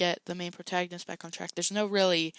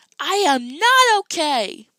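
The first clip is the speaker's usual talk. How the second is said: very loud, very high, drawn-out swooping shout; 9 semitones higher, 13 dB louder than usual. Doing impressions of characters from a show: imitating Piper yelling. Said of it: "Sorry to anyone who was listening".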